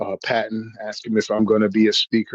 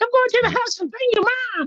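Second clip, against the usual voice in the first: put-on very high, shrill kid voice, rattled off. Describing a kid who shot you in a game, quoting him: high-pitched 12-year-old voice. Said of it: "this little 12-year-old with a high-pitched voice".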